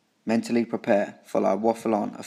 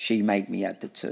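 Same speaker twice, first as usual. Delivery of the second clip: ordinary delivery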